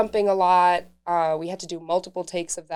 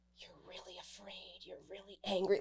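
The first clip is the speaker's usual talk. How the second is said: very quiet, hushed, urgent whisper; 18 dB quieter than usual. Retelling what was whispered right before rolling: imitating a whisper. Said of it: "whisper to me".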